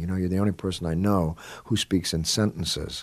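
plain

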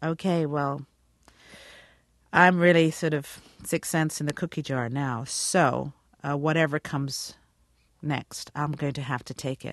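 plain

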